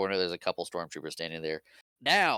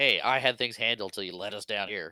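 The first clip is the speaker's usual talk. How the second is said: normal talking voice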